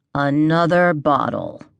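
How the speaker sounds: very slow, deliberate, condescending, word by word. Sliding the empty bottles closer to her, he repeats himself, very slow and deliberate. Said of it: "He'd said it very slowly, deliberately".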